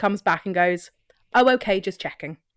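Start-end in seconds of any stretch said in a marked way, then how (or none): 1.3-2.3 mock, put-on sarcastic delivery. Retelling a sarcastic exchange, giving the other man's comeback as a mock-sarcastic reply. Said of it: "in his equally sarcastic wisdom".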